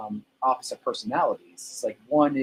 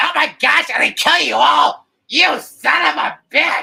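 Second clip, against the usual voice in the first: very high, very loud, rough, creaky comic clown voice; 11 dB louder than usual. Showing the voice used for a character, the speaker does a comedic character voice. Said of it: "I actually have this voice that I use for him".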